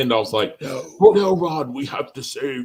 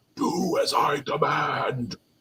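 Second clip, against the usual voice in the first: very slow, flat monotone, every word drawn out and level; 4 dB quieter than usual. Showing the others the voice wanted for Megatron: Megatron voice. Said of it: "I need that Megatron voice".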